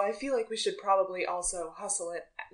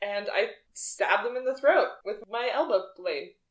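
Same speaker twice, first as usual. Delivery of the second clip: ordinary talk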